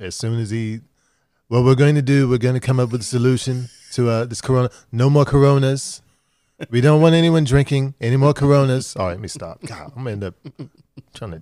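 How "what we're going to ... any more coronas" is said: sloppy, half-baked, loud put-on voice. Joking about the CDC, doing a shitty Trump impression. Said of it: "that shitty Trump impression".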